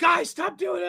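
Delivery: frustrated shouting, growing angrier. Recalling yelling at friends who trolled the speaker's name: retelling a yell. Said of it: "And I was like yelling".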